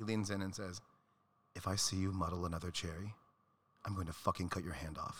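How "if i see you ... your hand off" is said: put-on relaxed, deadly earnest tone, calm. Retelling a bartender friend's warning: imitating a calm, dead-serious threat. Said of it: "in all seriousness, very sweetheart, very relaxed".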